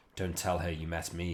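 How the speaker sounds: rough, scraped-out, hoarse, raspy voice. The Tomb Colonist draws the crew aside, speaking in a hoarse rasp. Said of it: "in hoarse rasp".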